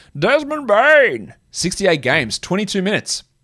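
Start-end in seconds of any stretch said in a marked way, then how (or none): 0.2-1.3 raised, pitched-up, booming cartoon villain voice. Trying out his practised villain voice while saying a name, Bane voice. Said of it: "maybe I'll just keep saying his name like that".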